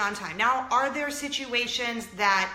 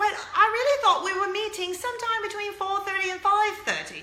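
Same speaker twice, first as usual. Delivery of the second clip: bad, fake British accent, very high-pitched; 9 semitones higher than usual. Retelling a story about a late meeting, the speaker voices Lady B: bad British accent. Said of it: "I'm going to speak British just for the sake of using a bad British accent".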